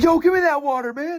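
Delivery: mock shrill screaming, very high and loud. Retelling how another homeless man started screaming at the speaker, imitating the scream. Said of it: "starts screaming at me".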